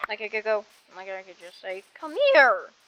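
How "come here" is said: high, loud, fake voice crack. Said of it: "I can make my voice sound like I did a voice crack".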